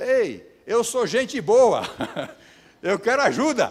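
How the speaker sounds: very loud, high, drawn-out calling shout. Retelling calling out to a distant house in the rain: imitating own past shout. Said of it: "Eu só gritei assim".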